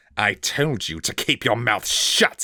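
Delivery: hissing, sibilant delivery with swooping pitch. Narrator reads a captor's line as he seizes Twig with a knife, hissing. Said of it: "he hissed".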